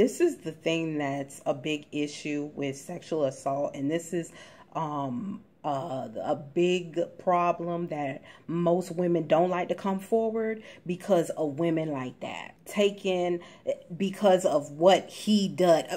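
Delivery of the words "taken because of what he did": ordinary talk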